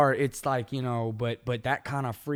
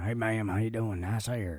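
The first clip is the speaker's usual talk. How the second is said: put-on ghost voice with a Southern accent; 2 semitones lower, 5 dB quieter than usual. Playing a ghost greeting someone from behind in the mirror: Southern ghost voice. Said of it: "the Southern Ghost?".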